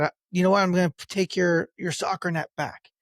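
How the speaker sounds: ordinary delivery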